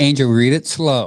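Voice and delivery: ordinary talk, nothing marked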